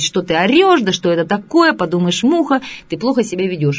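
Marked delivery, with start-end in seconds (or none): none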